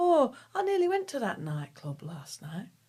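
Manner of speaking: put-on, sing-song Northern English accent. Quoting a woman met while travelling: northern english accent impression. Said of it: "That's my impression of a Northern".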